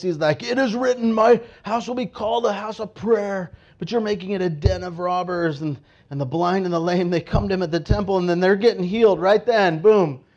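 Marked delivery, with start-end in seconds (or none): 0.4-5.6 mock urgent, proclaiming, reproachful tone. Retelling a story, acting out a man speaking in the temple courts, retelling a scream. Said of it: "he's screaming out this".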